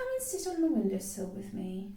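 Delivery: ordinary delivery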